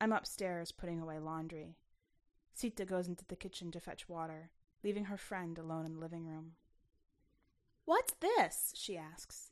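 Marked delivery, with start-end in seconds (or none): 7.8-8.7 very high-pitched, loud, calling-out shout. Alone in the living room, a visitor calls to her friend in the kitchen, shouting. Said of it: "shouting to Sita in the kitchen".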